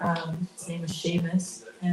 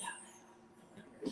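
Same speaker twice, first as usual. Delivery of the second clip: put-on raspy, very sick voice, much quieter. Retelling answering someone who thought she was sick, in a put-on raspy sick voice. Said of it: "I returned to my like raspy, like very sick voice".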